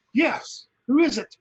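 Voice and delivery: alarmed, startled, high-pitched shout. Playing a character startled by a voice from a tree: startled shout. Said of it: "jumps up shockingly with a dagger".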